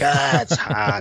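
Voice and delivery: slow, grumpy, complaining grumble.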